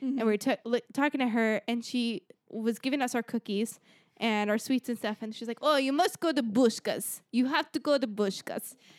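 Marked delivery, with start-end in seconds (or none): 5.6-8.7 woman's voice with a put-on Italian accent. Retelling what a woman who gave them sweets told them, italian accent. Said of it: "It was like an Italian".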